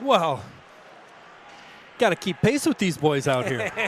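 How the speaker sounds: winded, panting, breathless delivery. Rejoining the hockey broadcast after keeping pace with the players, out of breath, huffing. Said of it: "I'm huffing and puffing".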